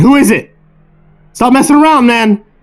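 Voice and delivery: acted, shrill, very high, frightened yell. Retelling a night of terror, the speaker acts out yelling outside: retelling a yell. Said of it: "We keep yelling outside".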